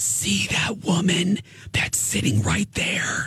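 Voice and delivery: slow, loud, carrying stage whisper. Retelling what the hairdresser whispered about a woman: imitating a loud whisper. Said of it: "She whispers to me".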